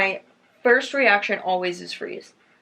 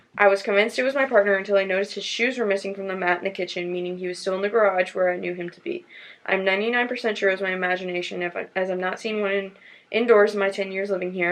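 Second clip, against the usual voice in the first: ordinary talk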